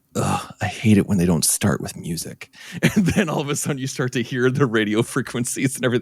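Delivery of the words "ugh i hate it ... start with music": put-on hushed whisper. Retelling what mom whispered in a silent movie theater, imitating mom's whisper. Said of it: "I hear my mom whisper".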